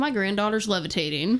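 usual speaking voice

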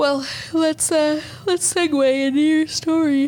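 talking through a yawn. Speaking with another person in a casual conversation, yawning while talking. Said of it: "can we try to say it without fucking yawning".

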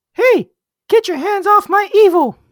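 high-pitched, loud squeaking voice. A line in a put-on voice after the podcast intro; Minnie Mouse-like voice. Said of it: "You sound like someone trying to impersonate Minnie Mouse".

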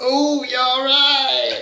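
put-on very high-pitched northern English accent. Imitating someone asking if they're all right: northern accent. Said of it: "turned Martina into a bloody northerner".

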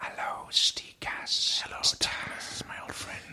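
soft, slow asmr whisper. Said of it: "whispering. So they'd be like".

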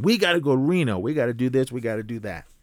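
woman's voice screaming, over and over. Retelling what an auntie stuck in the line screamed: imitating a woman screaming.

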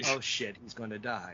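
put-on flat, deadpan delivery. Retelling a grandmother's reaction to what the man on camera explained, imitating deadpan delivery. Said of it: "the grandmother in deadpan said".

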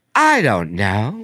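closely mimicked woman's voice. Retell her answer when you asked if everything was okay, imitating a woman's voice closely. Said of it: "You sound just like her".

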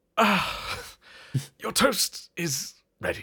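disdainful announcing voice. David comes out of the kitchen to announce the toast, as an annoyed, failed David Attenborough impression. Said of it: "David just comes out of the kitchen and is just like".

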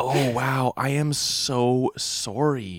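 acted, very slow, drawn-out, overly enthusiastic delivery. Retelling an apology to a biker: imitating own overly enthusiastic apology. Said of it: "a little too enthusiastic".

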